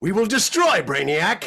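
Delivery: very high, loud, epic, bossy order-barking voice. Asked for a snippet of his character's voice, giving a bossy jerk character voice. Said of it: "can you give us a little um, snippet of that voice?".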